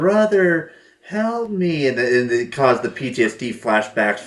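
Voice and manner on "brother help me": put-on high-pitched voice of a young girl. Describing the sound that stopped him, in a girl's voice. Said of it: "making the voice of a girl saying".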